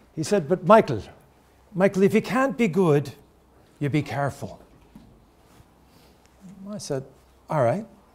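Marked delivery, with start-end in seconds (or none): 0.5-4.6 put-on Irish accent. Retelling his father's advice to him as a teenager, imitating dad's Irish accent. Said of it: "in his Irish accent".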